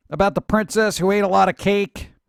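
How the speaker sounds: normal talking voice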